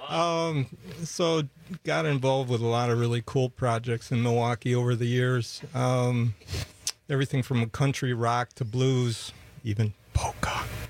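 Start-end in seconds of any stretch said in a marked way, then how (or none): 9.6-10.6 whispered aside under the breath. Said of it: "you don't even have to whisper that".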